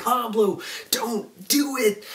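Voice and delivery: very high, drawn-out yell. Retelling watching a tense scene on TV, reenacting yelling at the TV. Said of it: "I'm yelling at the TV like".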